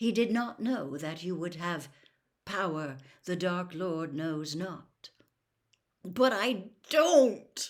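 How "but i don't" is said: choked, strangled, high, very loud outburst. Narrator reading a character's denial: strangled voice. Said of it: "said Harry in a strangled voice".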